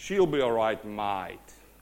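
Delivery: low, full Australian accent. Retelling what a man said, now saying it in the Aussie accent. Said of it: "let me say it in the Aussie accent".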